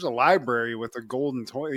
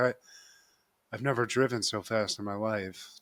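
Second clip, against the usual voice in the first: low, quiet, flat deadpan monotone drone; 4 semitones lower, 7 dB quieter than usual. Retelling what a woman said after driving fast, imitating a monotone voice. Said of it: "It's like very monotone".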